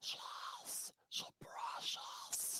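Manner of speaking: creepy whisper, very soft, barely voiced. Retelling creeping up behind him to speak right in his ear: Gollum whisper. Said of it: "creep up behind him all Gollum like".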